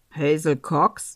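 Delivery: very low, deep, surly, unfriendly man's voice. Narrator reads an unfriendly man at the door asking for Häsel: deep, unfriendly voice. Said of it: "fragte ein unfreundlicher Kerl mit tiefer Stimme".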